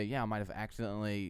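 ordinary talk

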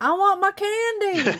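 put-on very high, movie-style little-kid voice. Recalling a film's scene, the speaker does the kid from it: impression of kid from film. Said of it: "That's the only impression I'm going to do".

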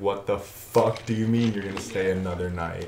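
ordinary delivery

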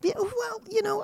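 mocking, very high, soft put-on voice.

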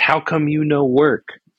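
high, screamed, mock scolding yell in broken English. Recalling an uncle yelling at the kids playing Doom, imitating Uncle Yin screaming. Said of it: "scream at us in broken English".

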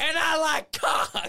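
put-on shrill, very loud, high Boston-accent bellow. Describing a meme video, imitating the man's yell in a Boston accent. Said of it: "him yelling, ... but in a Boston accent".

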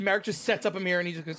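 normal talking voice

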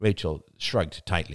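ordinary delivery

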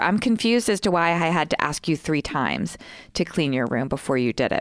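ordinary talk, nothing marked

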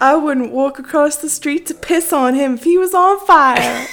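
clumsy country western accent. Asked on the podcast for a country western accent, the speaker tries a bad country western accent. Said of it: "I'm horrible at accents".

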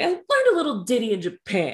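put-on old granny voice. Retelling a character's line: imitating a grandmotherly voice. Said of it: "And everything is that voice".

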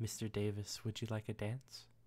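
soft, breathy half-whisper, close up. Voicing a coworker leaning in to ask for a dance: half-whispered into the ear. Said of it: "feel that tickle on the back of your ear as she says".

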